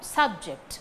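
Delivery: subject with stress on first syllable SUB. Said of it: "it is the noun".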